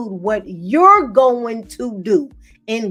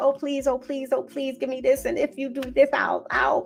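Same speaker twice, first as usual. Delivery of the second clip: mock pleading, quieter; 2 semitones higher, 7 dB quieter than usual. Mocking people who beg instead of creating: imitating someone begging. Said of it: "you don't beg for what's yours".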